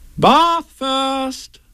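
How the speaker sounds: cheery storybook voice, very high pitched. Narrator reading Kanga speaking to Piglet: cheerful voice. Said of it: "Said Kanga in a cheerful voice".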